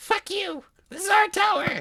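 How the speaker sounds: very high, squeaky goblin voice. Running a tabletop game, the game master voices two goblins in a goblin voice. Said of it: "you hear two goblin voices".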